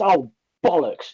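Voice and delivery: mock passionate, heartfelt dismay. Retelling how a woman swears after knocking over water, mock-passionate dismay. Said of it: "It's so passionate".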